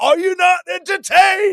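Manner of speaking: very high, stretched-out, drawn-out scream. Retelling a fighter's knockout celebration line: imitating a scream. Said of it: "he screamed into the fucking camera".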